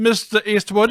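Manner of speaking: put-on high Irish old-woman accent. Showing the accent of the grandmother in Back to the Future Part 3. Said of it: "same kind of accent that the grandmother has".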